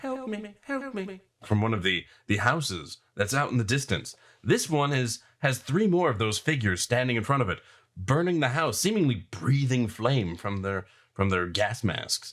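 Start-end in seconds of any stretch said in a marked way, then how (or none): 0.0-1.2 very high, weak, faint voice, slow. Narrating a burning town, a voice calls from a distant house, faint. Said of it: "you hear a faint voice saying".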